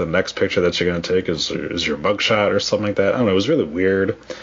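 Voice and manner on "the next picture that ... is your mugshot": ordinary talk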